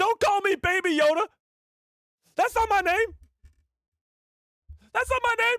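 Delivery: tiny creature voice, very high and loud, squeaky. Speaker imagining how Grogu would talk if he could speak, in a Grogu voice. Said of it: "He'd be like".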